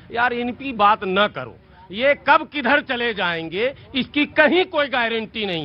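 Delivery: normal talking voice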